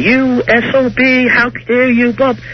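put-on very high, drawn-out yelling. Telling about a woman and a guy at a table, retelling the woman yelling. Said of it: "the woman starts yelling".

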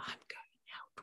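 hushed, very soft whisper. Showing how a speech tag changes the same line, whispered. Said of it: "whispered Inky".

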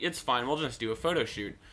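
ordinary talk

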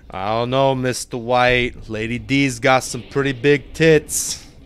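put-on voice slipping into a New York accent. Speaker acts out a two-character bit, answering the other character: Jesse impression turning New Yorker. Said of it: "my Jesse impression is just turning into a New Yorker impression".

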